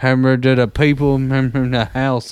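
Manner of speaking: put-on mumbling voice. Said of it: "It sounds like Boomhauer".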